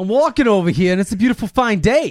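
loud, shrill, booming, high-pitched put-on Boston accent. Asked by the other speaker to do boston, say it in a boston accent. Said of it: "Do Boston".

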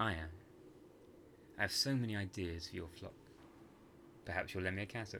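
ordinary delivery

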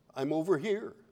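barely audible, very quiet, timid little voice. Retelling a story where a voice answers from behind a bush, putting on a quiet timid voice. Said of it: "quiet little timid voice that comes from behind a bush".

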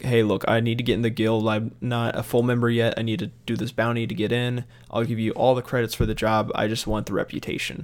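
normal talking voice

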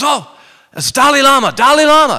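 mock thrilled old lady voice, very high and loud. Retelling an old lady's words on seeing the screen: imitating an excited old lady. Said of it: "She gets excited and she goes".

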